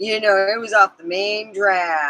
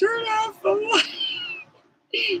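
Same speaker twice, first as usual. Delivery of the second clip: mock yell, much higher; 5 dB quieter than usual. Retelling a story, the speaker imitates their grandmother yelling. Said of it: "My grandmother was like yelling".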